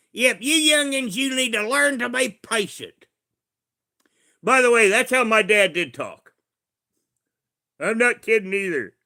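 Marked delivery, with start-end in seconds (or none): 0.2-3.1 put-on rural Kentucky accent, pitched up. Speaker slipping into his dad's Kentucky accent to address youngsters. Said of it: "let's talk with the Kentucky accent for a moment".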